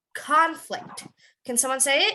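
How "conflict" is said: conflict with stress on the first syllable CON. Showing a class how to say the word as a noun, stress on the "con" in "conflict". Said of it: "You would emphasize on the con".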